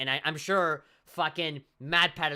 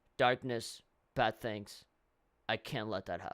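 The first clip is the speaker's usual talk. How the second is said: low, soft, bored, lazy, can't-be-bothered delivery; 5 semitones lower, 5 dB quieter than usual. Speaker mocking how the protagonist delivers a line, mock-lazy line reading. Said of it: "just very like lazily".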